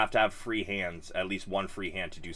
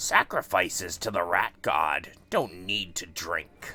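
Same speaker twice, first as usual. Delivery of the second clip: raspy, rasping voice, close to the mic; 4 dB louder than usual. An unseen captor answers a bound prisoner asking for a drink, in a raspy voice. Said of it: "You hear a raspy voice from not very far away".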